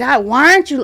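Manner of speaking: put-on high, heated shout. Retelling a screaming match with her dad: imitating her own raised voice. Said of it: "my voice got higher than his".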